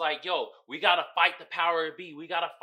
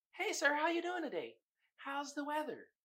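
very high, soft, sing-song put-on voice; 9 semitones higher, 9 dB quieter than usual.

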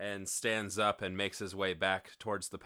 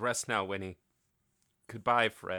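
ordinary delivery

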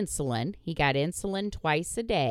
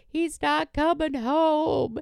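put-on, very high, drawn-out sobbing wail; 12 semitones higher, 5 dB louder than usual. Retelling coming home and answering the kid about Dorian, retelling bawling. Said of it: "And I'm bawling".

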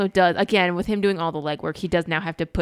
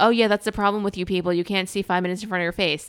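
ordinary talk, nothing marked

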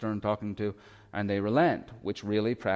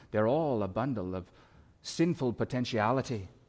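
put-on Irish accent. Echoing the words of Alistair Begg, mentioned this morning: Alistair Begg Irish accent. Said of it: "I can hear him in my head in that Irish accent going".

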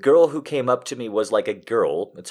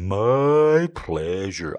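bad droopy cartoon-dog drawl, my stretched; 3 semitones lower than usual. Retelling a cashier's reply, doing a Droopy Dog voice. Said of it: "it was Droopy Dog going".

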